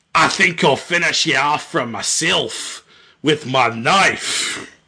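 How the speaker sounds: fully put-on Scottish accent. Another speaker urges him to keep going: put-on scottish accent. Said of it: "Oh yeah, that's 100% Scottish now".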